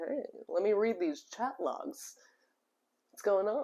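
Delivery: relaxed, smooth delivery. Describing what a television host did on set: smooth Chris Hansen voice. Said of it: "with a, like, smooth voice to be like".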